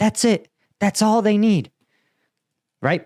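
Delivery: worked up. Arguing how simple a fire mission request should be: worked up. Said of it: "I'm worked up about this".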